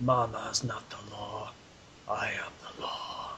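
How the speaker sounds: subtle, understated, very low, very quiet murmur. Retelling how he said his line subtly, very low, quiet voice. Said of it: "in a very low tone of voice ... Just says it so quietly".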